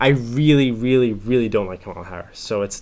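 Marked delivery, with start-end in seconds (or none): none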